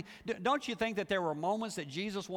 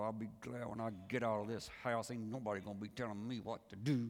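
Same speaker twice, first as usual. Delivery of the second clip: mock clenched-teeth speech, lower and quieter; 8 semitones lower, 6 dB quieter than usual. Imitating kids vowing to leave the house: imitating talking through gritted teeth. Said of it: "look at you with gritted teeth and go".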